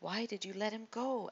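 hissed, exasperated tone with rising pitch. Abishai, out of Saul's hearing, questions David with an exasperated hiss. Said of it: "hissed, his voice rising in pitch with exasperation".

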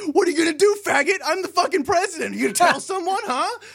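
put-on screaming, high and loud. Speaker retells a man's outburst in a story, imitating him screaming. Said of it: "And he's just screaming".

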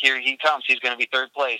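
ordinary talk

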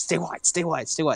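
mock screaming, high and urgent. Retelling someone screaming at a player during a game: imitating someone screaming. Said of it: "Pep's screaming at him".

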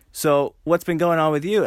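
normal talking voice

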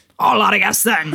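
pirate-flavoured character voice. Retrying a quoted line as Hagrid, in a pirate-ish Hagrid impression. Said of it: "We're going piratier".

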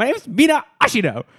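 play-acted, very high, genuinely angry tone. Retelling how the voice actor delivers the line: imitating Mina, actually quite mad. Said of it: "actually quite mad".

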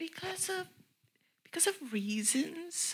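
high, soft, evasive whisper.

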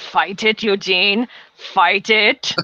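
put-on annoyed German accent. Retelling Hitler getting annoyed on the sideline: imitating annoyed Hitler, German accent. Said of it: "I can't do a German accent".

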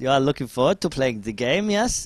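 put-on German accent. Retelling what a game developer said to them in the queue, put-on German accent. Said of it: "in like a German accent".

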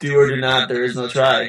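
ordinary talk

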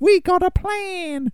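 put-on very high American accent, drawn-out. Speaker retells a film plot, voicing the mum: slipping into american accent. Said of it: "You went American".

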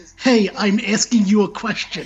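insistent, demanding, half-shouted mild yell. Retelling a scene where Riku yells at a voice: imitating Riku yelling. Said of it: "he's yelling at the voice".

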